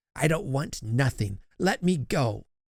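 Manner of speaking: snarled, hostile, snarling delivery. Narrating a story, voicing an old woman pulling away from a girl, snarling. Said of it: "she snarled".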